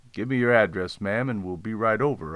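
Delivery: ordinary delivery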